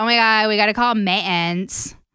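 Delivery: put-on full valley-girl speech. Explaining how friends teased her speech in college: valley girl voice. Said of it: "I sound like a valley girl".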